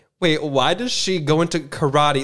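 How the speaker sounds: ordinary delivery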